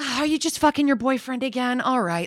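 unbothered, tossed-off high voice. Imitating a TV character whom nothing bothers: imitating Shauna, unbothered. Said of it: "nothing bothers her".

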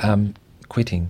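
ordinary talk, nothing marked

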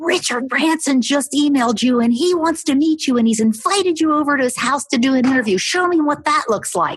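high, loud called-out yell. Retelling how the husband called out from below: imitating husband yelling. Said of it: "he yells out".

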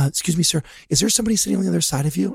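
leaning-in, high, hushed whisper. Retelling what a girl at the movie leaned over and said, whispered request. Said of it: "she leans over and she whispers".

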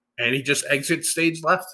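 ordinary talk

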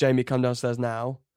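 normal talking voice

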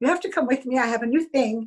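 heavy, put-on German accent. Retelling a friend's invitation: imitating a German accent. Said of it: "She had a German accent".

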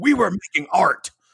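big booming delivery, pitched very high. Retelling a voice booming through headphones: booming Anne Heche voice. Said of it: "Anne Heche's voice booming through the headphones was like".

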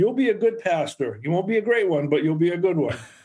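put-on strong Maine accent. Retelling what Elsie Lindblom said to him, in her strong Maine accent. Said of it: "with a strong Maine accent".

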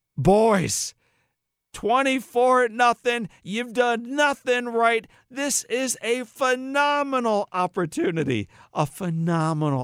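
acted, very high, rousing, swooping motivational yell. Retelling a coach's halftime talk to his losing team: imitating Bill Courtney screaming motivationally. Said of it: "he starts screaming at them in this motivational tone".

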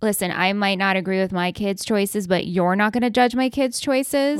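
ordinary talk, nothing marked

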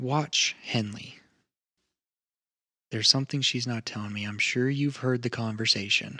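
low, hushed whisper. A game master voices a woman who gets close to a player: whispering. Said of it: "kind of whisper".

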